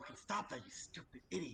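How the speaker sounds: harsh whispered scream. Player character yelling at an attacking bee in a tabletop game: whisper-scream. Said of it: "I'll whisper, scream".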